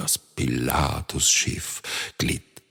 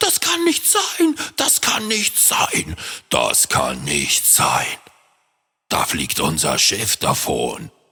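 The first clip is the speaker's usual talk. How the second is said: agitated, frantic pirate captain voice, wildly swooping pitch; 4 dB louder than usual. Reading a story aloud, the narrator voices the pirate captain, agitated pirate captain. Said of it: "der Captain der [name] hüpfte herum. / Und der Kapitän hüpfte vor Wut. / sagte der Kapitän. / der Captain der [name] hüpfte herum".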